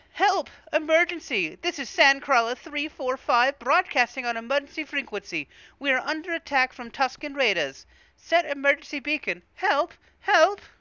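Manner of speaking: very high, loud protocol droid voice. Voicing a droid sending an emergency broadcast: protocol droid voice. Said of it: "was that a pretty good protocol droid voice?".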